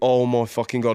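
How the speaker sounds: put-on panicking outburst. Retelling sitting there while the nurses went in to look: imitating own past panicking. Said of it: "like panicking".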